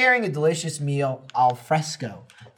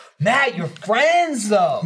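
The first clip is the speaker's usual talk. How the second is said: mock dry, cynical tone, pitched up; 5 semitones higher, 4 dB louder than usual. Retelling how Alfredo teases Matt: imitating Alfredo's cynical tone. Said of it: "I can hear the cynicism in his voice".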